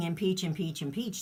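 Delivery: ordinary delivery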